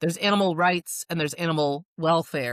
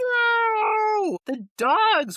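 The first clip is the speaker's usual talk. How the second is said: put-on screaming, higher. Retelling a reaction to glass dog panels on screen: imitating own screaming.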